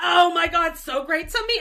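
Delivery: very loud, slow, drawn-out high scream. Retelling a TV scene where a character runs up: imitating Steve screaming. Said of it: "and he's screaming".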